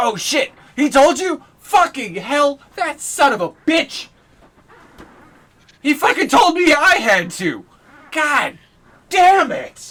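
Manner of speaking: very high, very loud swearing outburst. Narrating a scene to listeners, a character reacts to news by cursing loudly. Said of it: "You just hear him curse loudly".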